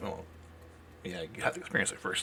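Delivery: very quiet, very low mutter under the breath. Playing a character answering another character's remark, muttering under his breath. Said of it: "Casper's gonna mutter under his breath".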